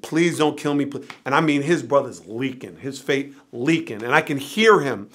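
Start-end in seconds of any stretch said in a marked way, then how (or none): 0.0-1.0 put-on desperate pleading, lower and quieter. Retelling a man begging his brother on a stoop: imitating someone pleading. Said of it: "pleading with him".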